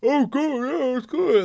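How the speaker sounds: put-on talking through full mouth, loud and high. Describing diners answering a server's check-in, acting out talking with mouth full. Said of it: "And your mouth's full".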